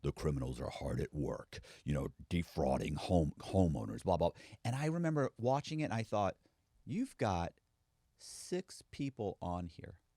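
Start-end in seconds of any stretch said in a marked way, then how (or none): 0.0-4.3 very low, sinister, ominous voiceover narration. Recalling a tv segment about criminals, mimicking its narrator in an ominous voice. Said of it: "there it's this ominous voice".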